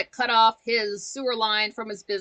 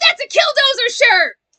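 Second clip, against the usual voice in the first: shriek at full volume, very loud and high; 11 dB louder than usual. Recognizing the letters on a shirt, yelling. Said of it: "Sorry for yelling".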